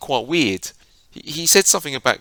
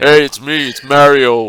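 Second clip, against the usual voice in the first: very loud, slow, big Texan drawl; 11 dB louder than usual. Imagining how an actor will voice Mario: Texan-accented Mario voice. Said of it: "some Texan accent".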